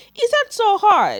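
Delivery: high, loud, slow, exasperated voice.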